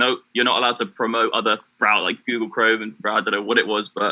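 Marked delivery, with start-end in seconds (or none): none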